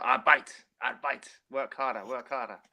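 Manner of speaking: shouting. Retelling what a former player used to shout: imitating Stefan Freund shouting. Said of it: "Stefan Freund used to shout".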